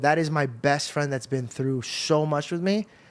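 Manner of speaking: ordinary delivery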